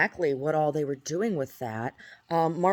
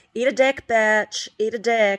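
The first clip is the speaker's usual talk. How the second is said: flamboyant drag-queen put-on voice, high, loud, drawn-out, taunting; 6 semitones higher, 7 dB louder than usual. Retelling harassing phone calls from a caller: imitating a flamboyant caller. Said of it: "sounded like a drag queen".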